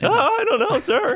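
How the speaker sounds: put-on very high teenager character voice. Speaker showing off the character voices they use: teenager voice. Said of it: "have the teenager voice".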